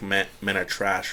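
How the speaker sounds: usual speaking voice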